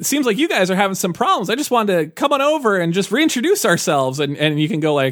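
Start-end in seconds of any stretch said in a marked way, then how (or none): 0.0-4.2 chummy, affable alien voice, pitched up. Retelling how a game alien greets the player: imitating an affable alien. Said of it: "affable Borg".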